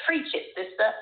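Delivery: put-on trying out American accent. In a discussion, the speaker tries out their American accent: put-on American accent. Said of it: "trying out my American accent and saying".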